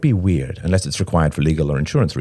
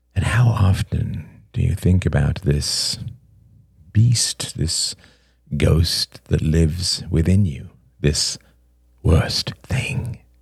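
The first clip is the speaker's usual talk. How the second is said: voice growing softer and quieter, slower. [name] questions Robert, his voice growing softer and softer. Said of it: "[name]'s voice grew softer and softer".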